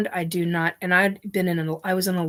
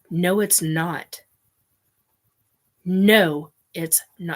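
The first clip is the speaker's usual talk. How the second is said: plain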